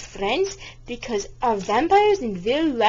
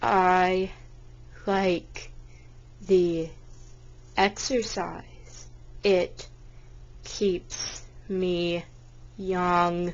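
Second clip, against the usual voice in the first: very slow, soft, halting, broken-up delivery; 4 semitones lower, 7 dB quieter than usual. Answering an interviewer's question as Merlin, slow-talking Merlin voice. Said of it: "you talk so slowly".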